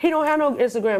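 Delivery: ordinary talk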